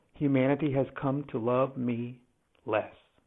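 very quiet, low, hushed, honest regret. A narrator admitting bad news to listeners, with honest regret. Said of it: "you can hear the honest regret in my voice".

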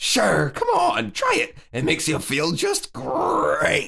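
swooping high, rough voice. Voicing the tiger in a shared story reading, with a little Tony the Tiger. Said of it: "you threw a little Tony the Tiger in there".

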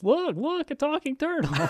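acted-out shrill, very high-pitched yelling. Imitating a character who always yells. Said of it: "the guy that always yells".

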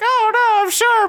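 very high chipmunk voice, slow and drawn out. Retelling a band member answering a comment in a chipmunk voice. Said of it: "he responds in a chipmunk voice".

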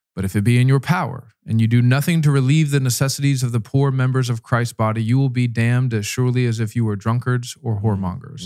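normal talking voice

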